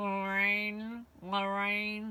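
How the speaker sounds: eerie, creepy, cat-like growling voice. Imitating the voice caught on a porch camera: creepy growling voice. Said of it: "the creepy voice on my porch camera going".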